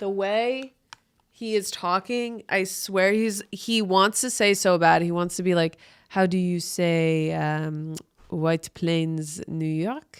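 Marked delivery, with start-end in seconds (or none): 6.1-10.2 slow, deliberate, fake European accent. Mocking someone in the video by imitating how he talks: fake European accent. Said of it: "This is how he's talking".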